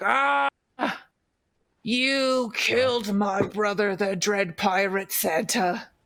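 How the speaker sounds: growling, menacing villain voice. Retelling to fellow players how the foe reacted in the game: growling villain voice. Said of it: "he just growls and is like".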